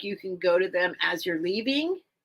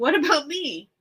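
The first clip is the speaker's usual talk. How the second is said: squeaky, small, high little voice; 8 semitones higher than usual. Piglet looks up and interrupts the writer, squeaky Piglet voice. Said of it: "said in his squeaky voice".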